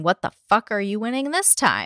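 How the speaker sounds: normal talking voice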